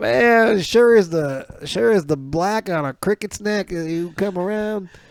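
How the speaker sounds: put-on Southern US accent, high-pitched. Retelling what a man said on arrival: imitating a southern accent. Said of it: "but he had a southern accent".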